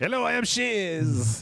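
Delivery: very slow put-on French chef accent, "Shez" drawn out. Joking that a game character's name sounds like a French chef: put-on French chef accent. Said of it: "Sounds like he's got a French chef".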